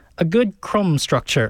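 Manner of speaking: bad, failed attempt at British accent. Explaining baking soda in bread, attempted Paul Hollywood British accent. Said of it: "That was an attempt at a British accent there".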